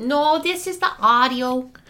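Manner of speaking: put-on Minnesota accent. Testing the audio before an episode, answering the other speaker, in a put-on accent. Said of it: "What accent is this that you're doing today?".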